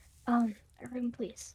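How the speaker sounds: soft, mumbled mutter under the breath. A tabletop player speaking as her character, under her breath. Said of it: "just kind of like under her breath".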